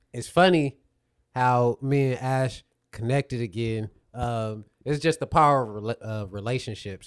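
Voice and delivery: slurred words running into each other. Greeting a guest after a long, exhausting work week: slurring words. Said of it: "I'm slurring".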